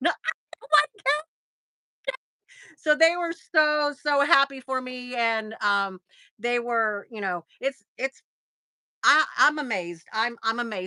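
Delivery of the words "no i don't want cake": very high, shrill, acted-out shrieking scream. Retelling refusing cake as others walked in: imitating own screaming.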